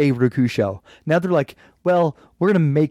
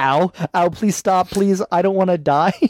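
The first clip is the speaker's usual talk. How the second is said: put-on children's screaming, higher; 3 semitones higher than usual. Describing how an episode's scene would go with real gun noises: imitating kids screaming. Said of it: "All the kids are screaming".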